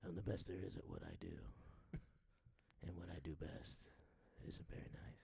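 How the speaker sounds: barely voiced, very quiet, breathy whisper. Quoting a superhero's line while discussing a movie: Wolverine impression. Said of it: "Is that a Reed Richards impression".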